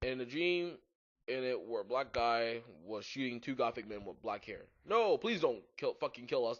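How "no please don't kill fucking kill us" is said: pleading, begging voice. Reading a story aloud, voicing men begging not to be shot: pleading. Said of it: "they pleaded".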